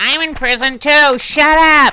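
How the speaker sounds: very high put-on yell. Acting out a mother yelling back from the next prison cell: put-on yelling mom voice. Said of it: "Why does she sound like Roseanne?".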